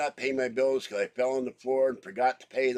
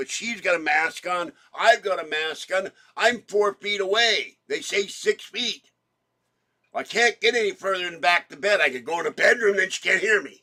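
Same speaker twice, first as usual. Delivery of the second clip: raised, loud, pitched-up voice; 7 semitones higher, 6 dB louder than usual. Speaking four feet from a masked woman so she can hear, in a raised voice. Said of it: "That's why I'm raising my voice".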